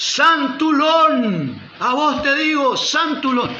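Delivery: pastor-style high, slow, drawn-out yell.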